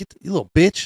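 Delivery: super aggressive, high-pitched delivery. Retelling what an old man shouted at a kid: imitating a super aggressive man. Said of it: "super aggressive".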